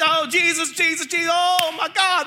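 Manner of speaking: very slow, high, stretched-out, drawn-out screaming. Retelling a row of non-believers as cars come; imitating people screaming. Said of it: "They're screaming, yelling".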